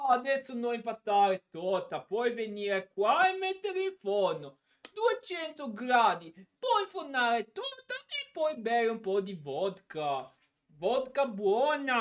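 mock Russian accent with a wide pitch range.

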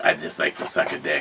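put-on gravelly voice. Joking about a woman the others like: imitating a gravelly voice. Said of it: "Got that gravelly voice".

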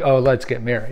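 normal talking voice

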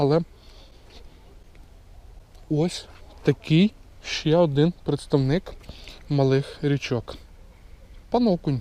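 talking with full mouth, chewing. Angler shows viewers a caught perch while eating, talking with a full mouth. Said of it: "Пардон, що з повним ротом".

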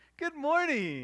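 put-on sunny tone. Retelling how parents greet people at church after yelling at their kids, mock fake cheerfulness. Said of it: "the fake smile that mom and dads have".

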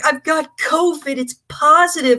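high, slow, tearful weeping voice. Retelling a phone call where Jeremy said he tested positive: imitating someone crying. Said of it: "Jeremy's crying".

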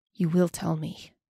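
growling, menacing. A narrator voices the elf demanding the key from Janir, growled. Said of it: "the elf growled".

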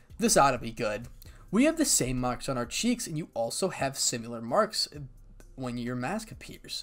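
plain

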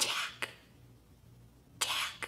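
hushed whisper. Calling someone's name, whispering.

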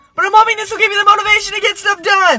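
shouting. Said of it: "I'm yelling".

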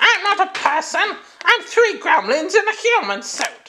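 very high, weird, strange little-creature gremlin voice. Acting out someone answering why they sound like a gremlin, weird gremlin voice. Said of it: "why do you sound like a gremlin?".

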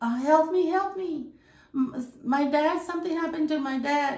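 put-on tearful crying voice. Retelling a stepdaughter's plea for help at the hospital: imitating a crying plea. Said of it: "she was crying, looking for a nurse".

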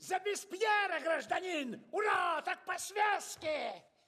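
shrill, rowdy, high, drawn-out yelling shout. During toasts to Robespierre and the revolution, yelling. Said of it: "Не ори, голова трещит!".

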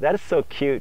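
ordinary talk

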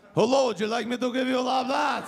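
heavy put-on Russian accent. Imitating a Russian stripper greeting a customer, in a heavy Russian accent. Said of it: "the Russian accent. It's a little heavy".

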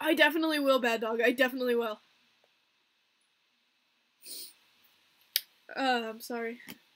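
tearful, trying not to cry. Speaker talks about chatting with their grandma, holding back tears. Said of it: "I'm trying to hold it in".

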